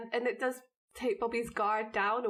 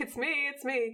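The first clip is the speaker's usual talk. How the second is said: mock high shouting; 5 semitones higher than usual. Retelling a fight scene where a character shouts: imitating someone shouting. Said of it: "Dean's kind of shouting".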